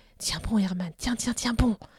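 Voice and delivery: whispering softly. Tempted to burst into sobs, Herman hears a small voice in his ear, whispered. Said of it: "une petite voix chuchota à son oreille".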